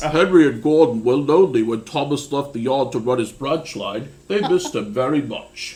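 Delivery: put-on narrating like a children's storyteller. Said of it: "my [name] impression of the narrator of Thomas the Tank Engine".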